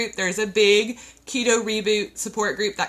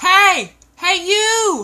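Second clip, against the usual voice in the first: shrill, high, loud yell; 10 semitones higher, 8 dB louder than usual. Telling listeners the reboot kits are only on sale through Friday, yelling. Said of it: "I'm yelling at you".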